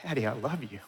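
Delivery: imitated very weak voice. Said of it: "in the weakest voice".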